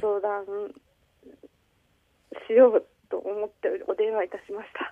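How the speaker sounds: tearful voice, near crying, holding back tears. A wife phoning for advice explains why she called; tearful voice. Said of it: "奥さんもう涙声じゃないですか".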